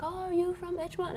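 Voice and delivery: high, terrible French accent.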